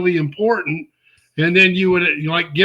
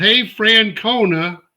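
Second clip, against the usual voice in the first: put-on, toned-down, mild jeering call; 3 semitones higher than usual. Speaker retells a man in a passing truck yelling at the listener: retelling a yell. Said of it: "drives by and yells".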